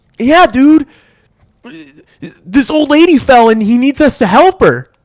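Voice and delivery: very high, play-acted, barely held-back laugh. Retelling a friend pulling a bit on him, imitating someone holding back a laugh. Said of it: "Like trying not to laugh".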